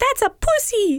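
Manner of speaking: put-on very high voice with thick, heavy Italian accent. Speaker retelling what their mom said on walking in, in a thick Italian accent. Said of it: "in her like thick Italian accent".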